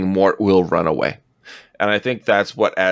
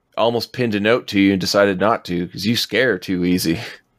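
ordinary delivery

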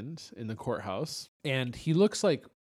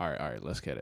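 mock-serious tone, much lower; 10 semitones lower, 6 dB quieter than usual. Retelling how he looked down at his script, mimicking someone getting serious. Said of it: "he's getting all serious".

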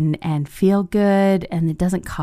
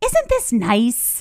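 content, savoring, pleased, high little voice; 5 semitones higher than usual. Retelling how an aunt reacts when enjoying something: imitating an aunt enjoying something. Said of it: "she looks at whoever's around and goes".

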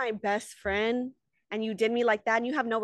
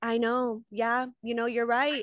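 put-on passive-aggressive voice. Retelling a reunion exchange, imitating Rachel, passive-aggressive. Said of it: "now you're being, like, passive aggressive".

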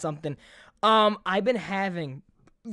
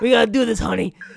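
put-on butch woman voice, louder; 2 semitones higher, 8 dB louder than usual. Retelling what the gastrologist said: imitating a butch lady. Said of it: "it was a butch lady".

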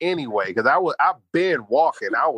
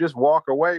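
plain

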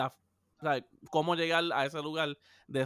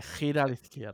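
put-on sexy, seductive, sultry woman's voice; 2 semitones lower than usual. Chatting with friends, showing how it would give directions, in a sexy woman's voice. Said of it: "con una voz de una mujer así sexy".

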